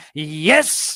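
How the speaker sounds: orgasmic, ecstatic, blissed-out climax sound on yes. Retelling the killer's reaction to a right answer: imitating an orgasmic yes. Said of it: "like, an orgasm".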